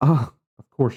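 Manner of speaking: words let out on a sigh. Voicing a character answering a traveler: said with a sigh. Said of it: "she says with a sigh".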